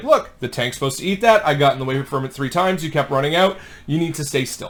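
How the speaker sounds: ordinary talk, nothing marked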